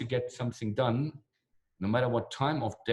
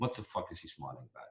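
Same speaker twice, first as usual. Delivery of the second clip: put-on wary, suspicious, distrustful tone; 5 semitones lower, 10 dB quieter than usual. Retelling how everyone reacted to the speaker smiling: imitating distrustful Russian reaction. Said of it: "kind of not trustful".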